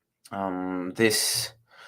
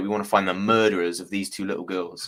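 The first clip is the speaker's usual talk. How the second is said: plain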